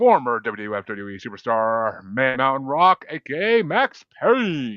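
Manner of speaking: slow, drawn-out ring announcer voice. Introducing the last but certainly not least name, in an announcer voice. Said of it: "working on my announcer voice for that one".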